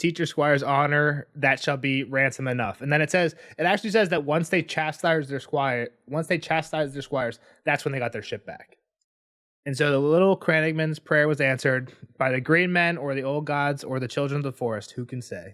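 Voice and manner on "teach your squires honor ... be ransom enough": ordinary talk, nothing marked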